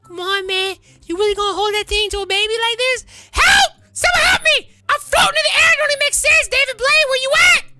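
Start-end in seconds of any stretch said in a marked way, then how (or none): 3.4-7.7 shrill, loud screaming. Playing a captive in a skit, screaming for help. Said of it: "Stop screaming!".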